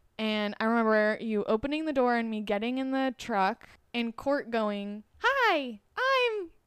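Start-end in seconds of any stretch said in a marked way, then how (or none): 5.2-6.5 put-on child voice, very high-pitched and squeaky, higher. Retelling first meeting a child in a truck: imitating Court's high-pitched voice. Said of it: "the highest pitched voice I've ever heard".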